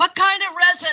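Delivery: booming, very loud, high-pitched shout. Retelling a stranger's question on the subway: imitating a shout. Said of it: "he shouts".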